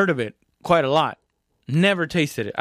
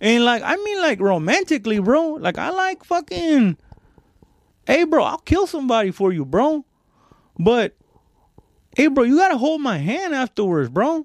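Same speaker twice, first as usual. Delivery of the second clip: put-on street accent, very high pitched; 9 semitones higher than usual.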